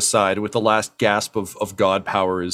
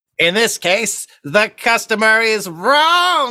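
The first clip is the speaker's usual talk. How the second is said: very high shriek, "wrong" stretched out; 13 semitones higher, 4 dB louder than usual. Voicing a character crackling with electricity at the far end: yelling. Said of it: "he just yells".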